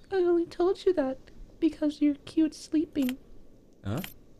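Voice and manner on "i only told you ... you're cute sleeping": very high, put-on feminine character voice. The speaker voices a female character, put-on feminine voice. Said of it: "I'm gonna give her a feminine voice".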